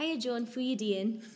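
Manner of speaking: Aberdeen accent. Explaining Scottish accents, showing how someone from Aberdeen asks how you are, Aberdeen accent. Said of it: "But where I'm from".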